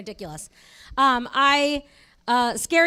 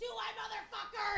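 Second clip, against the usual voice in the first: mock high, raspy, creaky, very quiet hushed taunt; 9 semitones higher, 18 dB quieter than usual. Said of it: "fucking louder than I could ever be".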